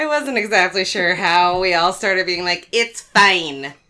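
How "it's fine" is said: put-on Minnesotan accent, louder. Showing how everyone started saying it: weird Minnesotan accent. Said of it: "doing a weird Minnesotan accent".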